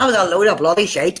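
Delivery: put-on attempt at a Belfast accent. Retelling words that came through a device, imitating a Belfast accent. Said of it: "That's me trying to do a Belfast accent".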